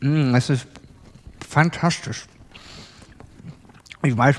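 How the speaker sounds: talking with mouth full. Eating tomatoes in front of listeners, the speaker is talking with mouth full. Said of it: "mit vollem Mund spricht man nicht".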